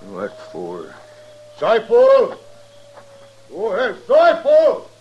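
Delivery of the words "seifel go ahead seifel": loud, high-pitched yell. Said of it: "What are you yelling about".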